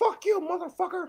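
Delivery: put-on high, squeaky cartoon mouse voice. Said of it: "Mickey Mouse voice".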